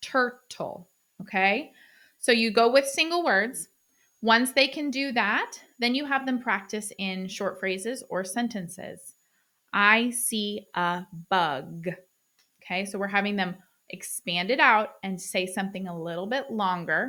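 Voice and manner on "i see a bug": very slow, mechanical, over-enunciated robotic speech. Demonstrating a short practice sentence in clear speech for learners: robotic speech. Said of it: "I sound kind of robotic".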